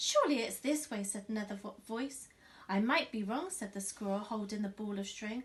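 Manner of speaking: plain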